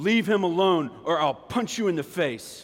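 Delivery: put-on loud booming voice. Retelling how a classmate stopped bullies at recess: imitating a booming voice. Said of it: "the booming voice behind me that said".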